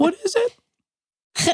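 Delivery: very high, squeaky, miniature mouse voice. Joking about mouse names with another speaker: miniature mouse voice. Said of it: "Is that your Minimum Mouse voice?".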